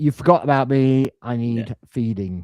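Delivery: put-on cat voice. Speaking for a cat who hasn't had his biscuits: voicing the cat. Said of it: "it's just like".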